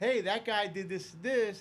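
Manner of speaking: play-acted muted, mild, half-hearted shout. Telling a story about a player who ran back on, acting out his screaming. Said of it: "And I'm screaming".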